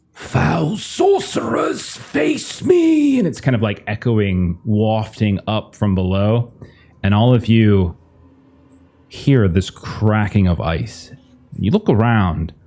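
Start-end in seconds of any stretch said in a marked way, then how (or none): 0.2-3.2 very high, very slow, drawn-out, defiant shout. Narrator voicing Balavan shouting up from below at the sorcerers: Balavan's defiant shout. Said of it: "he shouts almost defiantly".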